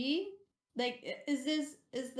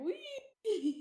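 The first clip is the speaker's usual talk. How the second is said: high, gleeful, squealing wee. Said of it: "in her chair going like".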